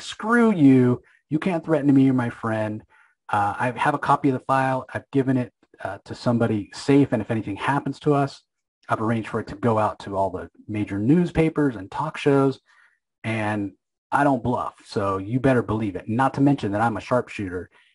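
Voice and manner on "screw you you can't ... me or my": plain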